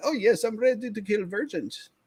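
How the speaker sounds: put-on German accent. Recounting what they said when they came into the game, imitating a german accent. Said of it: "came in with a German accent".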